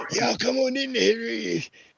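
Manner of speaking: put-on slow, raspy, scratchy old man drawl. Speaker recalling an old show's character, imitating a scratchy old man voice. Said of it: "the old dude with the scratchy voice".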